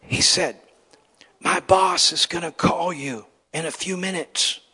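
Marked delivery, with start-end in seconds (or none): 1.4-4.5 put-on whisper, higher. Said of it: "and he's whispering".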